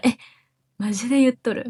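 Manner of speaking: slightly doubting, skeptical, disbelieving tone. Explaining a phrase used when doubting something, slightly doubting tone. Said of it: "ちょっと疑ってるトーン".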